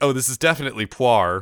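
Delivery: ordinary delivery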